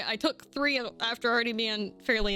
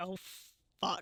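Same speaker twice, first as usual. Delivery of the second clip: dry, flat, expressionless deadpan; 2 semitones lower, 9 dB quieter than usual. Retelling own reaction during a New Year's Eve slow dance: imitating own deadpan remark.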